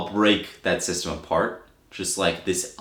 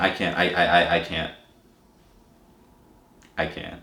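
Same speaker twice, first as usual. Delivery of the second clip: fake choking up, mock emotion; 2 semitones lower than usual. Complaining that someone came after Elgato products: mock getting emotional. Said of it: "I'm getting emotional again".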